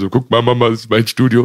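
put-on tearful voice. Recalling calling their mother back then, acting out speaking through tears. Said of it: "unter Tränen".

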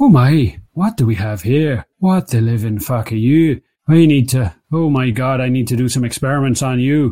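put-on wizened old fish doctor character voice. Voicing a wizened old fish doctor examining a stranger: wizened old fish doctor voice. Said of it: "you hear a voice saying".

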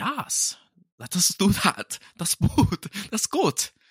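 terrible put-on German accent, very high-pitched. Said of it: "It's a terrible German accent".

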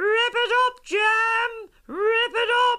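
very high, loud shrieking.

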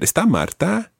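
questioning rise in pitch at the end of Marta. Spanish lesson asking whether someone is there, rising pitch at end of marta. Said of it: "remember raising your voice at the end".

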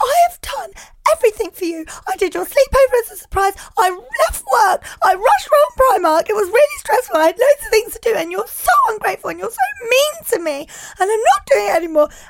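very high, loud, wailing fake sobs. A mother retelling what she said to her child at bedtime, pretend crying. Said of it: "I pretended to cry".

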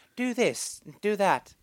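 put-on squeaky, crazy voice. Describing a random side character in a game, mimicking his squeaky, crazy voice. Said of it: "with his really squeaky, like, crazy voice".

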